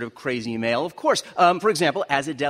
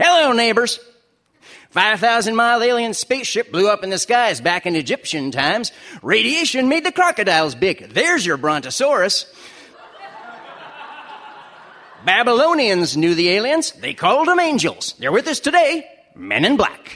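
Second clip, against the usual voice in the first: raised, folksy radio-announcer delivery, high and loud; 5 semitones higher, 5 dB louder than usual. Acting out the voice you heard in your head whenever you read it, in a Paul Harvey voice. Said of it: "I always just hear the voice of the late radio announcer".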